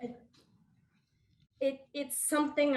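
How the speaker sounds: words catching in the throat, choking up. Speaker recalling adults' comments to her as a young girl, choking up a little. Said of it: "I'm choking up a little bit".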